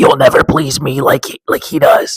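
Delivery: put-on possessed demonic voice. Retelling a scene where a woman is possessed: demon voice. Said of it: "she just gets into this demon voice".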